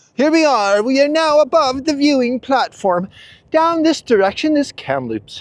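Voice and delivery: thrilled, excited yelling, pitched high. Narrating on the way up above the viewing platform, excited yelling. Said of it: "Sorry for yelling".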